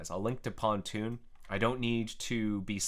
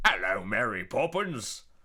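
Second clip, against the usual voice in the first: put-on over-the-top Cockney accent, louder; 5 dB louder than usual. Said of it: "impression of someone speaking with a Cockney accent".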